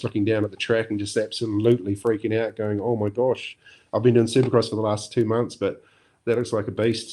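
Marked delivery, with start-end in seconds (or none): none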